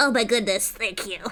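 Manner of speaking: put-on nasal childlike voice. Giving him a voice in an imagined scene: nasally little kid voice. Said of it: "I'm gonna give him like a nasally little kid voice".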